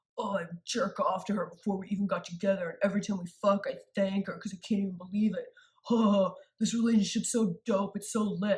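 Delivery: mocking imitation of a ridiculous douchey guy voice. Retelling how a famous ex talked about his partner: mocking imitation of a douchey guy. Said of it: "You sound like a robot set to douche".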